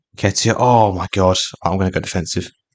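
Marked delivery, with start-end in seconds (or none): 0.2-1.4 scared, frightened tone. Watching an opponent's attack late in the match: scared. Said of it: "I'm really scared".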